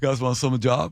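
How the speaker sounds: idle desk clerk character voice. Retelling a visit to a desk clerk, imitating the clerk's voice. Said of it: "here's what he sounds like".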